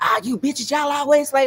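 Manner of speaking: mock disrespectful, loud, rude, dismissive tone. Contrasting two ways a man might say something: imitating someone talking rudely. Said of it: "you're not gonna talk to me like that".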